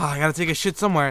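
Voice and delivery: ordinary delivery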